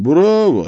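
said through a smile. A demon answers the man who guessed what he is; smiling. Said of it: "улыбнулся он".

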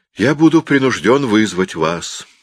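nonchalant, careless, offhand throwaway delivery. In a quarrel, a man answers the narrator carelessly. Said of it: "заговорил он небрежно".

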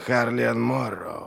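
hissed through clenched teeth. A narrator reads Glokta naming a man to a lord: hissed through clenched teeth. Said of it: "прошипел Глокта, сжав немногие оставшиеся зубы".

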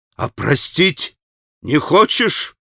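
wild, frantic, half-mad reproachful outcry. A man shouts at a woman, shouting with frantic reproach. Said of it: "прокричал Митя Грушеньке с безумным упреком".

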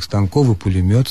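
ordinary delivery

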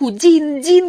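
very high, piercing, loud scream. She cries to Dean for help as her father grabs her, screaming. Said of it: "кричала она".

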